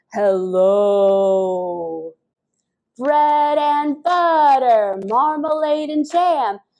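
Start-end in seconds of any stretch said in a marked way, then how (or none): 0.2-2.2 lowest possible, deep, drawn-out voice. Leading a group in a hello game, say hello in your deepest voice. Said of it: "Let's do our deepest voices".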